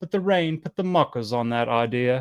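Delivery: faked British English accent. Giving an example sentence for an expression: put-on british accent. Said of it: "How do you guys like that British accent?".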